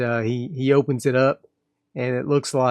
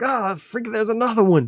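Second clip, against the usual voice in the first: very high, jumpy, alarmed, startled yell; 10 semitones higher than usual. Voicing a character startled when a possum attacks: startled yell. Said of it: "he startles, yells out".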